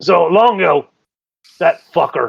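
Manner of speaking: put-on Scottish accent. Describing a recurring foe who claims the dungeon, in a Scottish accent. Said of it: "Now I'm turning Scottish".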